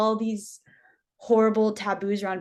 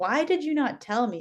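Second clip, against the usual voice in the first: play-acted, infuriated, furious outburst; 3 semitones higher than usual. Speaker retells confronting the missionary wife, retelling a furious outburst. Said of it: "like so infuriated".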